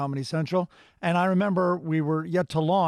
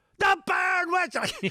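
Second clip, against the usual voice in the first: put-on crazy scream, pitched higher; 14 semitones higher than usual. Retelling a voiceover take, imitating Gilbert Gottfried screaming. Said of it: "Just his crazy screaming".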